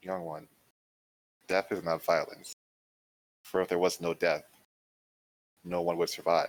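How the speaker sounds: hushed whisper. Narrating a scene, a death god leans in close to speak, whispering. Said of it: "she leans in and whispers".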